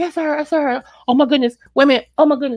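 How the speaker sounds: put-on panicked voice. Retelling when the phone rang and the caller was her: retelling own panic. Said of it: "I started freaking out".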